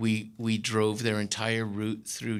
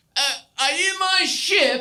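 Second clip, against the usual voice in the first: put-on very high, drawn-out drunken holler; 8 dB louder than usual. Retelling a drunk captain searching ships in fog: imitating him yelling. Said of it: "and he's yelling".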